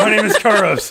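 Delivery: very high-pitched, flustered, panicked blurting. Speaking in character to a guard after casting Fog Cloud: panicked. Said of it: "I just kinda panic".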